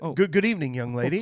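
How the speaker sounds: put-on nice, polite dad voice. Retelling a movie scene, imitating a nice polite dad. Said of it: "he perfectly plays this really nice, polite dad".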